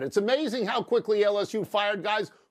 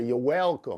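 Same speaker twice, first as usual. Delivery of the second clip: spoken in a Southern accent; 9 semitones lower than usual. Repeating a thanks in another person's style: Brian Kelly Southern accent. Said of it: "Let me say it like Brian Kelly would say it".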